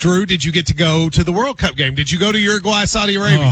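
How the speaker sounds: usual speaking voice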